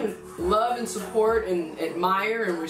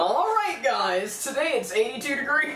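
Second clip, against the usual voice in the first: TV news anchor cadence and delivery; 4 semitones higher than usual. Mocking how tv news anchors sound, in a tv news anchor voice. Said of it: "That's how they be sounding".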